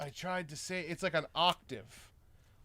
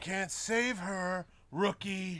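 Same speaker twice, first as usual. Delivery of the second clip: voice of a chain-smoking war veteran; 4 semitones higher than usual. Describing an actor's delivery, quoting the character in a heavy smoker's voice. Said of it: "sounded like he smoked a lot of cigarettes".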